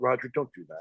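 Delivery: earnest, dead serious, pleading tone. Retelling how Gene Siskel begged Roger Ebert not to spoil the ending: imitating Gene Siskel pleading. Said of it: "Gene Siskel went".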